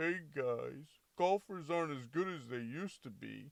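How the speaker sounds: nice mascot-style voice. Speaker showing how a nicely worded take sounds: nice Grimace voice. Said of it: "nicely say, ... in a grimace voice".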